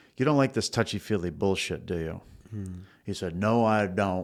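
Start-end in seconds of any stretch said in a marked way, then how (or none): 3.3-4.3 put-on Maine accent. Retelling a scowling man's reply to him, in a Maine accent. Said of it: "in his Mainer accent".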